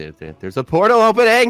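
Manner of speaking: shouting. A character in the pitch dark yells back to the group, hoping they hear. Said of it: "I'm just yelling in hopes that they can hear me".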